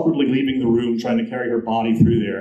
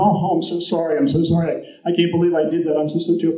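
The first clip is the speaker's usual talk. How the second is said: frantic, gushing, pitched-up, carried-on apologetic tone; 5 semitones higher than usual. Retelling how a man knelt beside a woman, imitating a frantic apology. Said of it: "He carried on so much".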